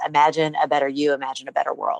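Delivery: plain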